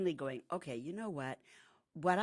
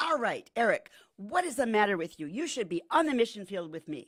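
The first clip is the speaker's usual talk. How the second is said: mock in-your-face scolding, raised and pitched up; 5 semitones higher, 7 dB louder than usual. Retelling how a sister got in her brother's face, mock-confrontational demand. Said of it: "his sister gets in his face".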